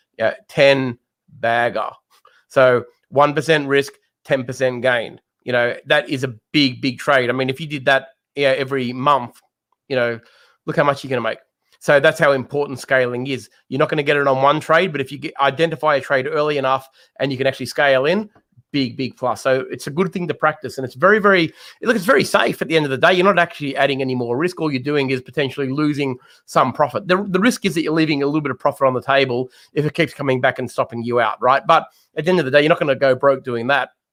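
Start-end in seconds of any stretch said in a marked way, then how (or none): 0.2-3.9 slow, drawn-out, emphatic delivery. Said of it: "Let me say that slowly".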